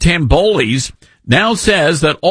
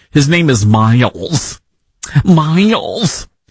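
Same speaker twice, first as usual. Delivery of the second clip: slow, put-on Michigan accent. Naming a pizza shop owner in a mock accent: Michigan accent. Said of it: "that's my Michigan accent".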